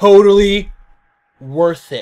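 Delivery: flat, straight-faced deadpan, no sarcasm. Retelling looking them dead in the eye to answer, retelling a deadpan reply. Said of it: "Like with a straight face, like no smile".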